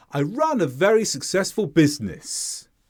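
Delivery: sharp, steep pitch drop on business. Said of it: "See how there's a sharp drop on the final sound".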